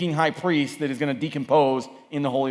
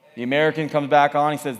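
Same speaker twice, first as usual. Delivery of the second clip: ordinary talk, nothing marked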